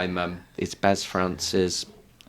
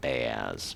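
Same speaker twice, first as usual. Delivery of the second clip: "bears" with a sarcastic ring; 9 semitones lower, 9 dB quieter than usual. Showing how others' careful pronunciation comes out: 'Bears' sounding sarcastic. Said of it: "it just comes out sounding sarcastic".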